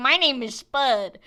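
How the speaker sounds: put-on slow, loud old man, Kentucky accent. Retelling answering the anime boys in-game: imitating an old man from Kentucky. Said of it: "Why does Spud sound like an old man from Kentucky?".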